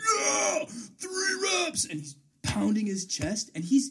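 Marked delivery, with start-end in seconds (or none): 0.0-1.8 play-acted, very shrill, very high, booming, all-out shout. Retelling a man jumping up after his reps, acting out a very loud shout. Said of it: "In the loudest voice imaginable".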